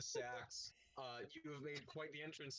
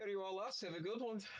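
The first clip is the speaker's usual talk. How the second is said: put-on vague, ambiguous European accent, pitched up; 6 semitones higher, 7 dB louder than usual. Voicing a woman serving the group their rounds of ale, vague european accent. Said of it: "She's vaguely, ambiguously European".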